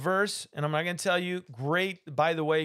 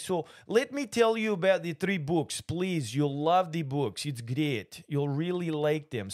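fake, mock Russian accent. Speaker talking to an audience in Russian because Pookie asked, mock Russian accent. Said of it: "Pookie wants me to talk in Russian".

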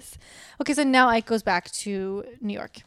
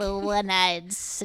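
put-on witch voice; 2 semitones lower than usual. Retelling what Grandma said to the kids, in a witch voice. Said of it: "She says it like a witch".

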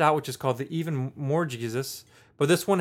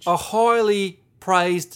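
put-on slow, loud British accent. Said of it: "I'm thinking Michael Caine".

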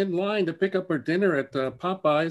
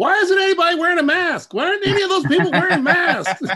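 very high, very loud shrieking scream; 11 semitones higher, 9 dB louder than usual. Retelling how the wife reacted watching the news: imitating wife screaming. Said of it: "just screaming".

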